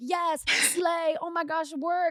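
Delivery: shrill, high, very slow, drawn-out cheering yell. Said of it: "who just yelled".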